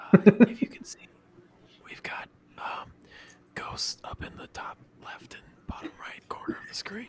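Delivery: very loud, breathy stage whisper, ASMR-like. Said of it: "Fuck your whispering".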